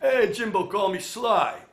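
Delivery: very loud, slow, high, belted out. Retelling Stallone's answer on the phone call: imitating Sylvester Stallone. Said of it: "here's me calling my hero Sly".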